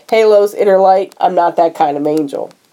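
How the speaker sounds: normal talking voice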